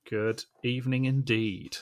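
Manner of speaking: formal radio announcer voice. Greeting the guests on the show: Radio Four announcer voice. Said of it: "I sound very, very, uh, Radio Four saying that".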